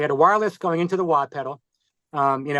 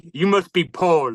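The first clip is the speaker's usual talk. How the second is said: thick, heavy, put-on German accent. Retelling what a guitarist said behind him: imitating a German accent. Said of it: "in his German accent".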